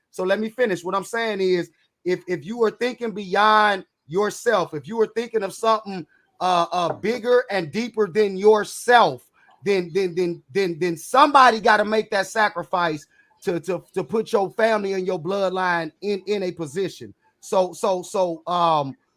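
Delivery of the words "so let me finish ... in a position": raised, insistent voice. Insisting on finishing a point in a group discussion, raised voice. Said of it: "I'm raising my voice at you".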